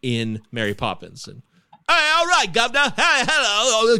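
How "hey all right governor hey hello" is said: high-pitched, exaggerated, badly done English accent.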